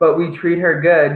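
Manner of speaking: plain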